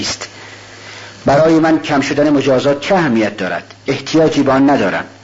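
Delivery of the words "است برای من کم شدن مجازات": usual speaking voice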